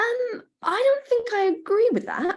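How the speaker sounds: very high-pitched, uncertain voice. Retelling disagreeing with a colleague for the first time: imitating own high-pitched, unsure voice. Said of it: "in a very high-pitched, very unsure voice".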